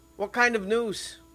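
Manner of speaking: put-on Scottish accent. Playing a dwarf character in the scene, Scottish dwarf accent. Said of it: "dwarf are Scottish".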